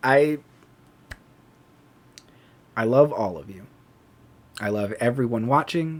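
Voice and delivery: choked up, teary, fighting off crying. Greeting and thanking everyone watching, holding back tears. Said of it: "I trying not to cry".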